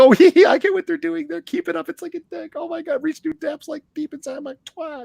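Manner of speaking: very high, giggly rich-housewife voice. Parodying innuendo, mock giggly rich housewife voice. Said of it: "rich housewife giggly innuendo".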